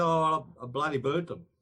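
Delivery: ordinary delivery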